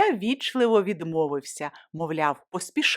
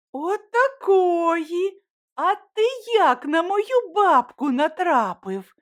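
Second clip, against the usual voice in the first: very high, slow, drawn-out astonished exclamation; 11 semitones higher, 4 dB louder than usual. Running down the stairs, a girl meets the young man carrying her grandmother's bags and exclaims in surprise. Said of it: "Здивовано вигукнула вона".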